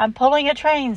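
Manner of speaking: pleased self-satisfied tone. Answering a signalman's question about his train, speak proudly. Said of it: "said Thomas proudly".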